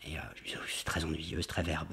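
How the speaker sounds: soft, unvoiced whisper.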